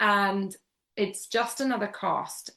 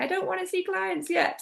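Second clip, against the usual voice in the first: high, small, timid, nervous inner voice. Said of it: "that little voice going".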